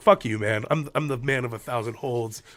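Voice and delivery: ordinary talk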